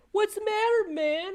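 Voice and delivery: mock nonchalant, smart-aleck, flippant, very high pitch. Retelling what a lady said to a man with a phone: flippant Renee Good imitation. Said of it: "she just flippantly, like, kind of nonchalantly, like, smartassly said".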